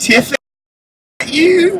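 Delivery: put-on high teenage girl voice. Retelling hearing someone call out at the elevators: imitating a teenage girl voice. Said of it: "this teenage girl voice say".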